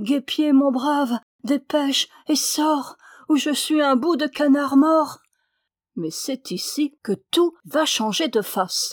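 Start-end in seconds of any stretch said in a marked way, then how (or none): 0.0-5.2 crying out like one dying. A duck calls on his comrade to hurry out: crying out in a dying voice. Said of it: "il s'écria d'une voix mourante".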